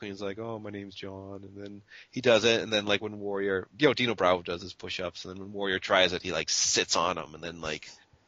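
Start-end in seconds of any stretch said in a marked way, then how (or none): 0.4-1.4 hushed, very quiet, soft-spoken voice. Retelling a wrestling moment, quoting the big wrestler: soft-spoken Earthquake impression. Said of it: "he's very soft-spoken".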